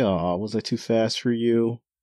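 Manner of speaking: gleeful, jeering, mocking, gloating tone. Retelling a manga scene where Izo taunts Gintoki: imitating Izo mocking. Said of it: "Izo's basically having a great time just mocking Gintoki".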